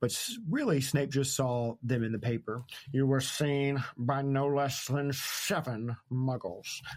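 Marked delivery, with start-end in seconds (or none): 2.9-6.8 put-on lisping voice. Recapping a scene and quoting Snape: Snape voice with a lisp. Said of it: "I don't know why Snape had a lisp there".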